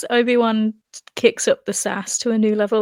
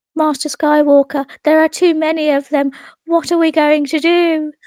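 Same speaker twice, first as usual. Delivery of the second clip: put-on high, loud voice of a four-year-old child; 6 semitones higher, 6 dB louder than usual. Doing an impression of a young Jedi pleading with a master, in a four-year-old child voice. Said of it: "I'm getting into character. I'm four years old".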